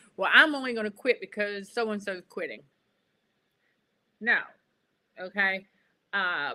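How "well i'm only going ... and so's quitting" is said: ordinary talk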